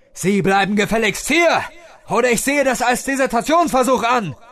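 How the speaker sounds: shrill, very high, loud screaming yell. The commander yells after his soldier heading into no man's land, screaming. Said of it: "schrie der Kommandant".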